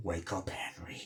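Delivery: threatening, slow, soft whisper.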